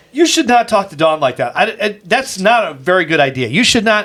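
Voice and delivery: ordinary delivery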